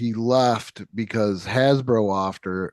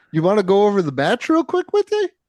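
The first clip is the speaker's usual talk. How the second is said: put-on Canadian accent, very high, sing-song and swooping; 10 semitones higher, 4 dB louder than usual. Describing very helpful, kind people at a match: canadian accent. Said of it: "With the Canadian accent".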